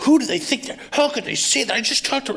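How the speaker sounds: very high, outraged, livid yelling. Recounting watching TV at his uncle's house, retelling a yell. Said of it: "I'm like yelling".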